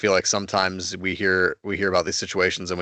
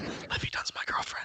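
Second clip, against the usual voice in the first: acted-out whisper, much quieter and slower. Describing what a pitcher does before every pitch, retelling a whisper to himself. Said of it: "He just whispers to himself".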